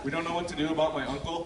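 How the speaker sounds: normal talking voice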